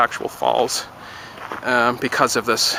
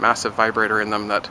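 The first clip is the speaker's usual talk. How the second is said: ordinary delivery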